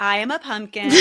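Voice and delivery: ordinary talk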